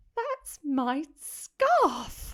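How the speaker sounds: tiny, high, trembling, slightly affronted voice. Reading the words of a voice the narrator hears, small, high-pitched, tremulous voice. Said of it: "a small, high-pitched, tremulous voice".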